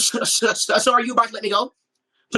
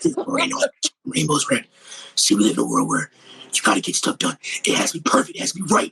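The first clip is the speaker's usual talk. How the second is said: hard, very low, tough vigilante voice; 7 semitones lower than usual. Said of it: "my impression of Frank Castle".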